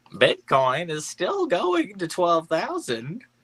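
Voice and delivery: put-on very high, swooping old grandma voice. Showing a friend how to say a meme line, in an old grandma voice. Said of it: "you got to say it like a grandma".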